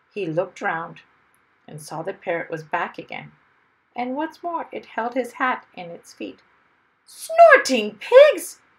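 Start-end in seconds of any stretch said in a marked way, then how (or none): 7.1-8.6 very high, very loud, swooping outcry. Seeing the parrot holding his hat, a man in a plane is crying out. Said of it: "cried Mr".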